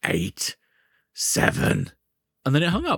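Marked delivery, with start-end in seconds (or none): 0.0-1.9 mock sinister, low, menacing voice. Retelling a strange phone call, imitating the caller's mock-menacing voice. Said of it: "someone saying this menacing voice like".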